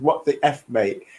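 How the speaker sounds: ordinary delivery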